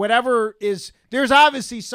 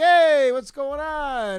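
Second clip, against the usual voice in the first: laid-back put-on voice, higher; 7 semitones higher, 3 dB louder than usual. Retelling how Ezra greets the newcomers, imitating Ezra, casual and chilled. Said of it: "and he's like".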